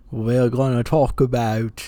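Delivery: fumbled, attempted Australian accent. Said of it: "I can't do this accent at all".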